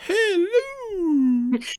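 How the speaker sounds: shrill, high, drawn-out shriek. On a podcast, echo a guest's greeting in a Mrs. Doubtfire voice. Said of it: "It sounded like Mrs. Doubtfire, like".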